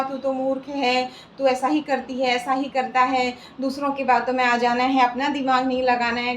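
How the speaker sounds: ordinary talk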